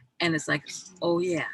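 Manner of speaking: normal talking voice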